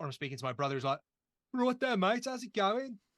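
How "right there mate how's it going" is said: put-on Brummie accent, easygoing, high and loud. Describing family at home, imitating a brother's Brummie accent. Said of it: "Half of them speak Welsh".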